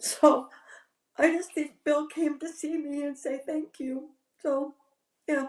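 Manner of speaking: crying, voice very high, tearful. Speaker apologizes after telling of hearing a voicemail greeting, crying. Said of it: "sorry, I'm crying".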